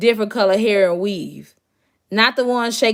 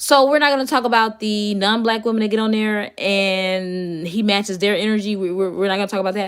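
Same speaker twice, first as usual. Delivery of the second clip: plain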